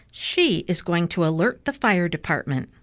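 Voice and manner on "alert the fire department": ordinary delivery, nothing marked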